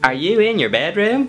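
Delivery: squeaky, very high-pitched falsetto voice. Voicing a dad character in a scene: very high-pitched dad voice. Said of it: "He has a really high-pitched voice. Let's do that for this dad".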